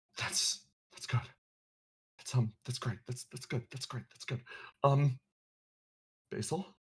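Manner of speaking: hesitant, slightly panicked. Answering over the comms after being called by name: hesitant, with a hint of panic. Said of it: "you hear hesitation in his voice. A hint of panic".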